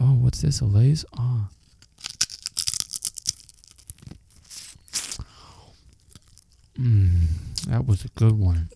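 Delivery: put-on soft, close asmr-style whisper. Joking about turning the podcast into ASMR with potato chips: mock ASMR voice, soft and close. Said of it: "I'm gonna get real close to the mic, and my mouth gonna get real soft".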